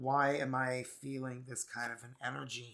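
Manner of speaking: plain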